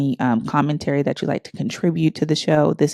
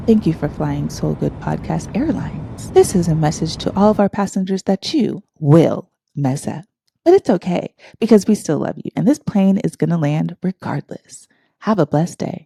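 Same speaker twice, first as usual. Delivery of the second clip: sweet, nice flight attendant announcement voice; 2 semitones higher than usual. A podcast host shows another way to say it: flight attendant voice. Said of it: "I can say it in like my flight attendant voice".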